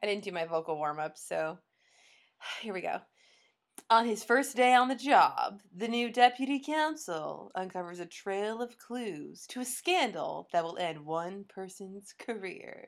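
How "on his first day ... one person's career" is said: grand, suspenseful, dramatic announcer-style narration. Reading a show's plot summary aloud in a dramatic announcer voice. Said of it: "I'm going to try to do it in a good announcer voice".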